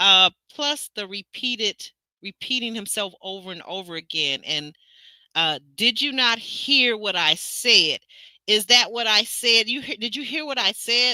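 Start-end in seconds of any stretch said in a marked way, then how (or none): 5.8-11.2 put-on condescending, repetitive talking down, as to a child. Speaker reenacts a man's repeated words to a woman, mock condescending tone. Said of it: "talking to her in a condescending tone".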